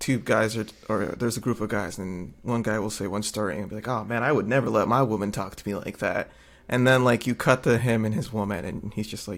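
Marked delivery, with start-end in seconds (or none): none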